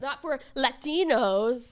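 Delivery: put-on furious frantic ranting. Retelling a TV rant about the halftime show: imitating Megyn Kelly frantically angry. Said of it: "She was so, so frantically angry".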